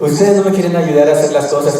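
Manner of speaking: ordinary talk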